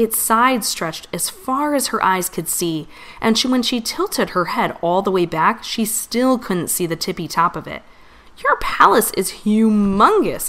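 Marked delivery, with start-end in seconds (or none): 8.4-10.5 slow, drawn-out, loud exclaiming cry. Narrator voices the visiting princess speaking to the queen: exclaiming. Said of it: "Itty exclaimed".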